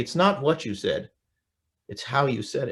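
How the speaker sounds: ordinary talk, nothing marked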